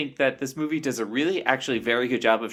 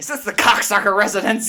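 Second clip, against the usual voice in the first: absurd put-on voice, very high, squeaky, loud; 9 semitones higher, 6 dB louder than usual. Describing a film scene on the phone, imitating Kathleen Turner's ridiculous voice. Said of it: "puts on this like ridiculous voice".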